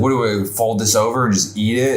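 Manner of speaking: normal talking voice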